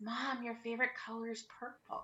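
quiet, soft, hushed half-whisper. Retelling what her son half-whispered to her: imitating a half-whisper. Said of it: "my son leans over to me and whispers".

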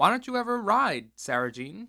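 shy, tentative, timid, slightly high pitch. Narrator reads a man asking a woman grooming her horse: asking timidly. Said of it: "he asked timidly".

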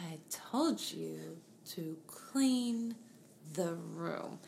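eerily calm, slow, creepy motherly voice. Recalling telling someone to clean the room: put-on calm creepy mom voice. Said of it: "I spoke in that creepy mom voice where you're like".

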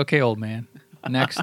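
plain

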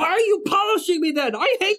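very high, angry voice. A talking gun snaps at the player trying to get it out: angry talking gun. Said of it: "this gun is actively mad at you".

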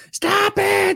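acted-out screechy, very high-pitched woman's scream. Recounting a street fight, imitating a woman in the crowd screaming. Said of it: "woman screaming like".

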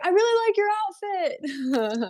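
very high, drawn-out, carrying acted yell. Speaker recounts a woman calling to them from catty corner, retelling a yell. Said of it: "she like yelled".

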